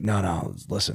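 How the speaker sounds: exhausted, out of breath, low worn-out murmur. Retelling a phone call from a man explaining a problem, imitating an exhausted voice. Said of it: "He's all exhausted".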